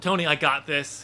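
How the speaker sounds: plain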